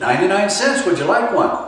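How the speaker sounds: high-pitched, bubbly voice. Retelling ordering fries, the speaker voices the reply in a bubbly blonde voice. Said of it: "some bubbly blonde voice".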